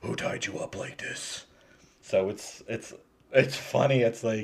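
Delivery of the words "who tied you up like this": put-on hero growl, quieter, faster. Retelling a scene where Bruce Wayne questions a tied-up man, in the Batman voice. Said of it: "he does the Batman voice".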